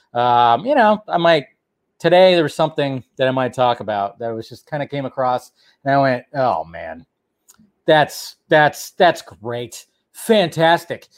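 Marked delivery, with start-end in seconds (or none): 6.3-10.9 heavily sarcastic, meaning the exact opposite. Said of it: "I'm being sarcastic".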